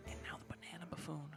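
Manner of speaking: whispering excitedly. Announcing the next card in the podcast commentary: excited whisper. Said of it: "I don't know why I started whispering".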